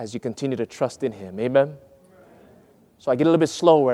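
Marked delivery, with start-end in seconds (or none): 0.0-1.4 much softer, hushed solemn delivery. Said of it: "I soften my voice".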